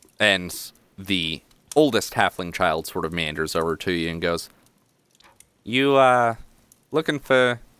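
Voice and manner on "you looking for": put-on New Jersey accent, much higher pitch. Narrating a scene, voicing the oldest halfling child in a Jersey accent. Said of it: "Why do I also give him a jersey accent?".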